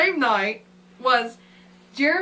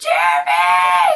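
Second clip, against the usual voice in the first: loud, screamed call; 6 semitones lower, 8 dB louder than usual. Retelling calling for Jeremy after finding a mouse, imitating a scream. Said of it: "I start screaming".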